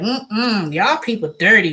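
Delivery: slow, snooty, haughty, stuck-up put-on drawl. Retelling how they act on visits to New York, mock-snooty. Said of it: "I get a little snooty".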